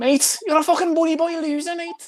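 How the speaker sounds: voice pushed very high, shrill and squeaky. Answering a request to do a Darren Till impression: Darren Till impression. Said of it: "Darren Till impression?".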